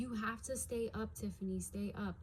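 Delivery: ordinary delivery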